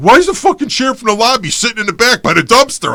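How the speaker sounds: high-pitched, shrill, loud yelling. Retelling a phone call where the boss yelled: imitating someone yelling. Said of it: "he yelled at me on the phone".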